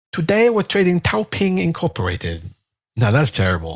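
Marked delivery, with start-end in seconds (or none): 0.1-2.4 poor fake Chinese accent, sing-song. Speaker trying out an intro line before going on TikTok, in a bad Chinese accent. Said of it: "I can do a better Chinese accent than that".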